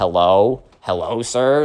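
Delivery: low, bewildered, baffled, questioning tone. Retelling how Ava reacted when a classmate sat next to her: imitating Ava. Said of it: "Ava kinda looks at him like".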